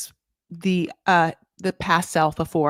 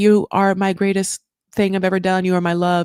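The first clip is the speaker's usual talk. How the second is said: mock-tearful, put-on sobbing voice; 3 dB louder than usual. Recapping a scene, quoting a woman's words to him: imitating someone crying. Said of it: "is just like crying so much".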